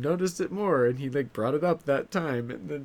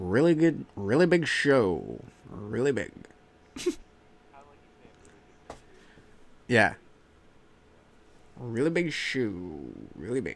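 swinging tune with shoe stretched out; 3 semitones lower than usual. Doing a Johnny Carson impression. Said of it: "That's my Carson impression".

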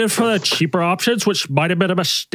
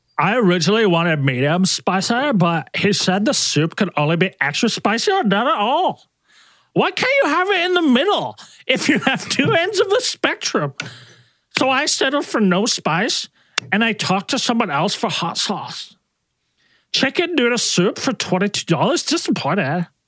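spot-on put-on cartoon princess character voice; 3 semitones higher than usual. Complain about a chicken noodle soup order to a listener, in a Lumpy Space Princess voice. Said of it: "you're nailing Lumpy Space Princess's voice".

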